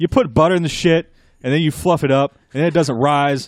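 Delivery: put-on thick Boston accent with attitude, loud and high. Quoting a man from Boston who took up cooking, imitating a very heavy Boston accent. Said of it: "very heavy Boston attitude and accent".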